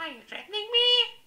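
very high, loud, squeaky goblin voice.

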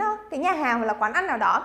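ordinary talk

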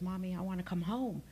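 acted tearful crying voice. Retelling her daughter's 1 a.m. phone call, imitating her daughter crying. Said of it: "and she's crying".

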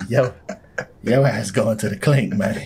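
put-on English accent. Imagining Terrence Howard narrating the game, in Terrence Howard's English accent. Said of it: "He might be more Scottish than Rupert fucking Grint. English".

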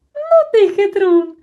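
very loud, very high, admiring outcry. A listener reacts to the speaker's argument about the suitcase, admiring cry. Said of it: "захоплено скрикнув Чмих".

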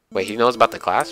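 ordinary delivery

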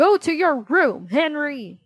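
loud, high-pitched shout. Dad orders Horrid Henry to his room after Henry's outburst, shouting. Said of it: "Shouted Dad".

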